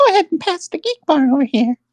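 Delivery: put-on squeaky cartoon mouse voice. Showing the others a Minnie Mouse impression. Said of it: "my Minnie Mouse impression would just sound like Mickey".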